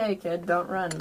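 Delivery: ordinary delivery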